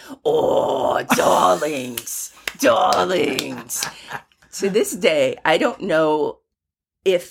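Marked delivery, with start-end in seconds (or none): 0.2-3.9 rough, gravelly tone. Retelling what an actor said when they ran up to him: Harvey Fierstein gravelly voice. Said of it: "he's known for his gravelly voice".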